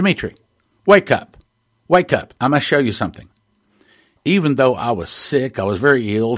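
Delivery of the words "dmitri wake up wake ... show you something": loud calling voice. Recounting a night when a voice woke him: retelling a loud voice. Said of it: "i heard a loud voice say to me".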